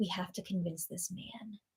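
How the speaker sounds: soft, secretive, conspiratorial whisper.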